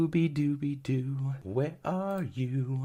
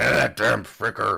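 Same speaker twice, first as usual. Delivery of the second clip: put-on pirate voice, much lower pitch; 4 semitones lower, 7 dB louder than usual. Voicing a character while playing, in pirate voice. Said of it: "I don't know why I made you sound like a pirate".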